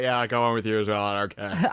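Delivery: put-on drunk voice. Joking about a trailer character who drank too much: imitating drunk Agatha. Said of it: "had way too much to drink".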